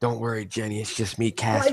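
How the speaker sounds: soft, hushed half-whisper under the breath. Quoting a movie character talking to a girl: imitating a half-whisper. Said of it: "He's, like, whispering to her".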